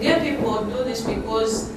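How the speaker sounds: ordinary delivery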